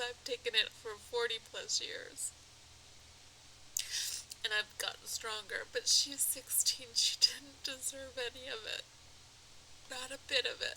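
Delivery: in tears. Speaker sending apologies to a grieving family and addressing bullies, crying. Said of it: "that's why I'm crying".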